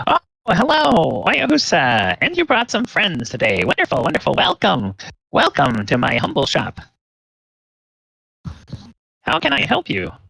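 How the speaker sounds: very high, squeaky, sing-song halfling voice, swooping around. Voicing the halfling shopkeeper greeting the visitors: Fastenber voice. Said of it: "you notice a little, uh, halfling".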